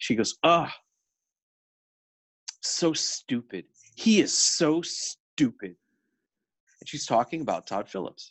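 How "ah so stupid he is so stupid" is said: very slow, vitriolic, scornful, acted-out delivery. Retelling a Film Comment editor's remark on a director: imitating Amy Taubin's dismissive vitriol. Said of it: "the dismissive, uh, the vitriol in her voice".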